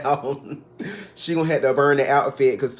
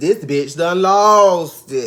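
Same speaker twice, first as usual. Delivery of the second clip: loud, slow put-on voice, "lost" stretched out; 2 semitones higher, 5 dB louder than usual. Describing Toya losing it at the table, Nene voice. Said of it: "In my Nene voice".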